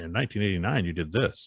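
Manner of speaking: ordinary talk, nothing marked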